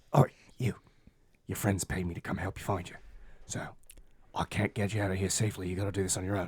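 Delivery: little, small creature voice. Narrator voicing a little green face poking out of the shadows: little voice. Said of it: "a little voice comes out of the darkness".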